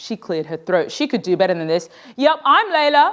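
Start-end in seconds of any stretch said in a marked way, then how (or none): 2.2-3.1 high, sudden, blurted-out yell. Reading a story, a student answers the teacher: yelling. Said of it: "she yelled".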